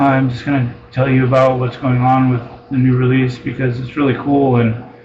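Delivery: dull, level, flat droning monotone throughout. Mocking people who have no business doing videos: flat monotone voice. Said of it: "they're in a super monotone voice".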